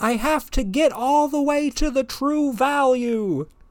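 acted, very high, shrill shrieking yell. Retelling a woman on a scooter yelling at a lady walking her dog, retelling someone yelling. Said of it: "she yells at the lady".

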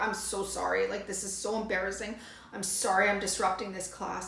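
mock apologetic whisper. Retelling apologizing in class to the woman who brought her Kleenex: retelling an apologetic whisper. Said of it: "I'm whispering to her".

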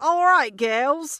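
put-on loud, high, belted-out Australian accent. Retelling a doubles partner agreeing to play: Dr. Hawking's Australian accent. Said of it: "With his Australian accent, of course".

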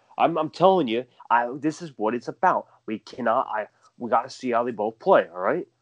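mock irritated, blowing-up rant. Imitating his answer to a reporter's repeated question: mock irritated rant. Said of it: "That's literally how he talks".

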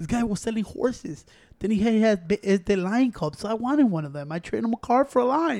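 soft, quiet, gentle voice. Retelling Mike Tyson's story of how he got a lion, in a Mike Tyson voice. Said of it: "I try to do the voice I can do".

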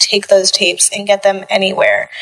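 ordinary talk

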